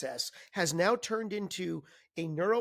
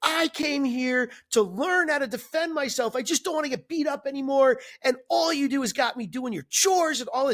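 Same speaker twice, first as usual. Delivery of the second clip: very loud, high, yelled outburst; 6 semitones higher, 9 dB louder than usual. Retelling a movie scene where Daniel yells at Mister Miyagi: imitating Daniel yelling. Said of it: "Daniel yelling at Mister Miyagi".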